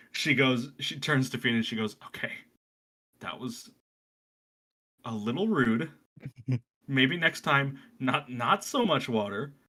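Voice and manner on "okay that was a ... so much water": carrying stage whisper, mildly scolding. Retelling how she turns to Fina to speak: hushed but audible tone. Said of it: "in a sort of hushed tone, but uh definitely not quiet enough".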